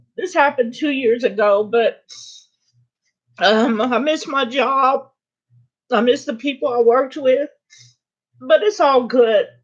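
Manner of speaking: crying, tearful. Apologizing to listeners while telling them about missing an old job, crying. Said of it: "I don't know why I'm crying".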